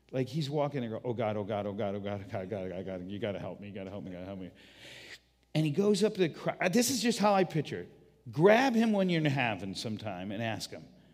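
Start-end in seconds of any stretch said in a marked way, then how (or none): 1.0-4.5 nervous, anxious, earnest, heartfelt, repeated prayerful pleading. Retelling a man's prayer as he faces a hungry crowd: imitating an anxious prayer. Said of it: "most anxious, honest prayer he ever prayed".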